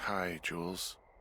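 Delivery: sleepy, weary, tired, just-woken voice. Woken up to answer the radio, greeting the caller in a tired voice. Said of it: "you sound tired".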